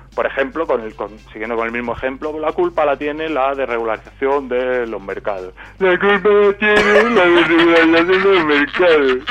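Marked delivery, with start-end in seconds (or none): 5.8-9.2 mocking idiot voice, louder and higher. Showing how to repeat someone's argument back at them, in a mocking idiot voice. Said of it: "repetirlas poniendo voz de gilipollas".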